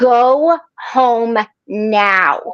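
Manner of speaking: dad voice, like a parent. Retelling what Michael said on the phone, imitating Michael's dad voice. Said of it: "his dad voice kicks in".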